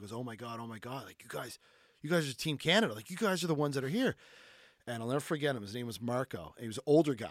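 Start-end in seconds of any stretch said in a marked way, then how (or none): 0.1-4.2 acted panicked freaking out. Retelling a man at lunch recognizing team canada, imitating someone freaking out. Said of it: "He's freaking out".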